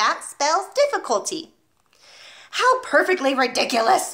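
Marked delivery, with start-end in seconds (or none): 2.5-4.1 words pushed out through a snort. The Trunchbull answers Nigel's spelling rhyme, snorting. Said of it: "snorted the Trenchbull".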